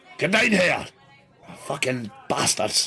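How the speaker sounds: put-on Scottish accent. Telling of a voice heard from downstairs; Scottish voice. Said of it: "The Scottish voice sort of saying".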